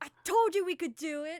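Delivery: joyful shout in character. Voicing Vosk cheering after the dragon dies: happy yelling in character.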